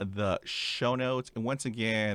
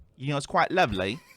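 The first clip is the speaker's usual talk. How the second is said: loud Cockney accent, put on for show; 4 semitones higher, 7 dB louder than usual. Trying out an accent while talking about a show, Cockney accent. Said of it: "It's from Cockney".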